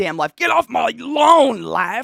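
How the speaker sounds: put-on shrill, loud, creaky grumpy old person shouting. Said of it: "Life yells at me like an old person".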